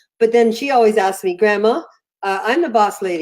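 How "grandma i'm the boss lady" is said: ordinary delivery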